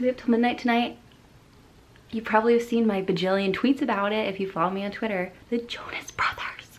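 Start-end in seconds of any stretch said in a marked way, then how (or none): 5.5-6.8 whispered, higher and quieter. Sharing news of a new single at midnight: whispering. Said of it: "I have to whisper it".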